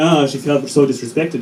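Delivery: ordinary talk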